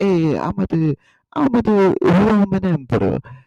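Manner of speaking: put-on high, unhurried Italian accent. Showing how fun the Italian accent is, speak as Julius Caesar with an Italian accent. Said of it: "Julius Caesar, who's like".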